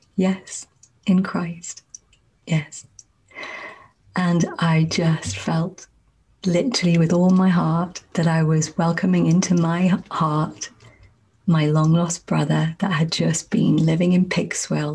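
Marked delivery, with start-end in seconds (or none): 0.2-2.9 hushed, very quiet, slow and softly spoken. Retelling answering a man who asked permission to contact them, very quiet. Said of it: "I said very quietly back".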